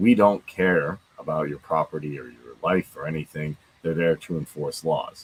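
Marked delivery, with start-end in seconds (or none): none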